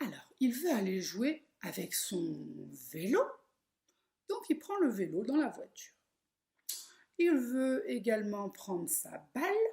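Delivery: very slow, deliberate, word-by-word delivery. Telling a children's story so listeners can sign along, very slow. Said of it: "je vais dire très lentement l'histoire".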